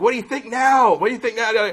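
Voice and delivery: shrill, very high, shrieking scream. Retelling a woman smashing her ex-boyfriend's Mustang: imitating someone screaming. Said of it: "screaming like".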